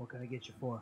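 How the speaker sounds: soft, slightly raspy bartender voice. Voicing the bartender greeting someone who approaches the bar, a bit raspy voice. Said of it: "In a bit of a raspy voice".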